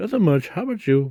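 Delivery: high-pitched, put-on girly voice. Acting out a story conversation, answering a greeting in a put-on girl voice. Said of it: "I was trying to do a girl voice".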